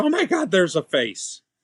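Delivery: play-acted sudden, high, frightened scream. Retelling a late-night ghost hunt, imitating Katie screaming. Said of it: "Katie just throws her phone and screams".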